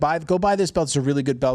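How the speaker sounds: ordinary talk, nothing marked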